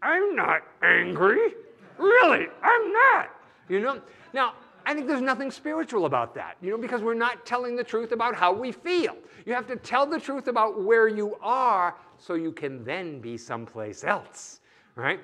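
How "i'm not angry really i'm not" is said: very slow, loud, forced speech through clenched teeth. Imitating people who insist they are not angry: speaking through gritted teeth. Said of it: "have said for years through gritted teeth".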